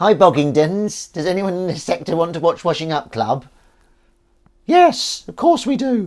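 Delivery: very high, loud, squeaky, cutesy cat voice. Greeting the audience in the voice used for talking to a cat: cat voice. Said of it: "that's the cat voice".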